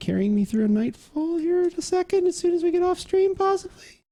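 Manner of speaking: very high pitch climbing upward. Saying aloud that another player might help after the stream: voice going really high. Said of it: "Your voice got really high".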